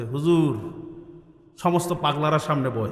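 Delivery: normal talking voice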